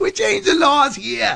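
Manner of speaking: very high-pitched Boston voice. Quoting the words for a T-shirt with a man's picture on it, in his Boston accent. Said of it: "With his Boston accent".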